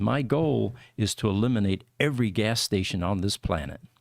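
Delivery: ordinary delivery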